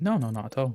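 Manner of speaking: heavy, obvious, thickly laid-on sarcasm. Answering a teammate who asks if you've noticed: obviously sarcastic. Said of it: "That sounded obviously sarcastic".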